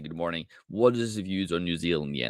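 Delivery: ordinary talk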